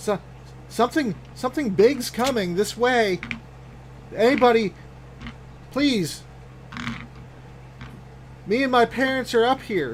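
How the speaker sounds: put-on high little-girl voice, tearful, choking back tears.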